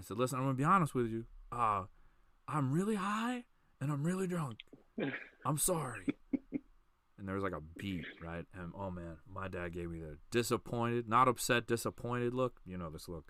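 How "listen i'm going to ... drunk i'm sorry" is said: put-on, high-pitched yell at full lung power. Retelling what he told his dad while deaf: imitating himself yelling. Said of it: "yelling at the top of my lungs".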